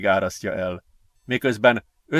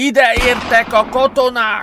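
high, drawn-out yell, pitched way up; 12 semitones higher, 4 dB louder than usual. As gunfire starts, Gergő warns the others from behind a rock, shouting. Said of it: "Ordította Gergő".

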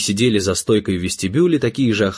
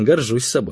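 ordinary delivery

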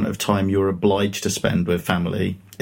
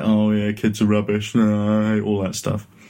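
jaded, dismissive, cynical mid-twenties voice. Imitating a dismissive person in their mid-twenties: mock cynical voice. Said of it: "I don't know what that voice is supposed to really indicate".

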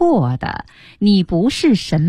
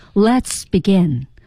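authoritative, commanding tone, pressed downward, falling. Showing how the master says a line, commanding, falling tone. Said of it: "师傅呢永远是有点像发号施令的意思 ... 有点下压的".

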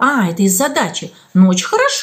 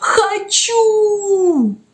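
hoarse, anguished, drawn-out rasping cry; 8 semitones higher than usual. A crying boy answers the caretaker scolding him; hoarse, anguished cry. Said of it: "хриплый, надрывный крик".

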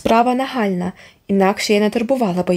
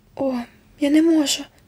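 high, scared, frightened whimpering voice; 7 semitones higher than usual. Narrator reads a character answering an instruction, frightened whimper. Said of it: "перелякано заскімлила Міранда".

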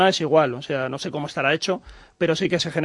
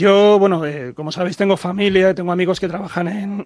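cracking voice, breaking with emotion; 2 semitones higher, 4 dB louder than usual. Answering whether a bird could dent a plane's nose, the speaker's voice breaks with emotion. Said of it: "Se me quiebra la voz".

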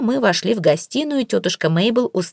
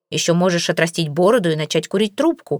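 ordinary delivery, nothing marked

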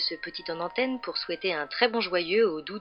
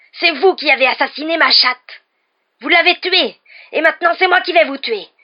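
screeching yell, very high and loud; 10 semitones higher, 14 dB louder than usual. A man turns on someone in the corridor, shrill shouting. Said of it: "cria-t-il d'une voix stridente".

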